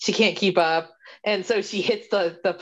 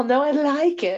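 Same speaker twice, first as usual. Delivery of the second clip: slow, high-pitched put-on British accent; 9 semitones higher than usual. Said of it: "she sounds British during this conversation".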